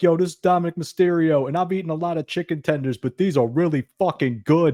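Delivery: put-on New York Brooklyn accent. Retelling a video seen on a restaurant's Instagram, Dominik Mysterio impression, Brooklyn accent. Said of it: "why did he sound Brooklyn?".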